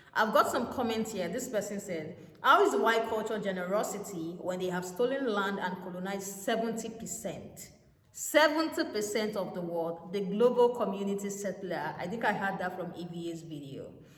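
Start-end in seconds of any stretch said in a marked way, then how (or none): none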